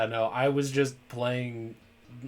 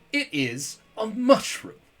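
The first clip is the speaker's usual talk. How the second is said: very high, slow, haughty, condescending superior tone; 10 semitones higher than usual. Acting out the game's rival explaining truffles: imitating an air of superiority. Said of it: "the air of superiority into it".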